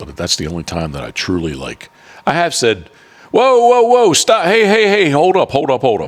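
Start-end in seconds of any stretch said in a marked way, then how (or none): 3.3-6.1 playful, lighthearted yell, pitched way up high. Retelling how he stopped a son shooting from the blind, retelling a lighthearted shout. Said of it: "a little more lighthearted saying it".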